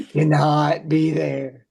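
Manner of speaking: put-on deep American Southern accent. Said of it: "Susan has a deep Southern accent".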